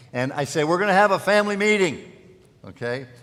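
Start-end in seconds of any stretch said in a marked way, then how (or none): 0.6-2.0 very loud, booming, raised calling voice. Dad calling everyone to a family meeting, in a loud, booming voice. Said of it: "I have a loud, booming voice".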